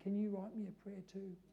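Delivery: very quiet, shy, reserved voice. Retelling a shy woman reaching out across the aisle, in a quiet voice. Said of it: "in a quiet voice".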